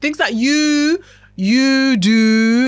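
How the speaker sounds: strong, heavy stress landing on you. Speaker describing things you do to sabotage yourself, strong stress on you. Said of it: "like I'm emphasizing the word you".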